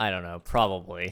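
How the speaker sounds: ordinary delivery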